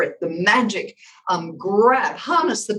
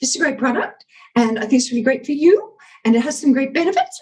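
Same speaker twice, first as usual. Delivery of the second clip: upspeak lilt, rising at great, you and benefits; 5 semitones higher than usual. Demonstrating an annoying speaking habit, going up at the end of every sentence. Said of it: "where you're going up at the end".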